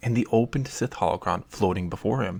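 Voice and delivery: ordinary talk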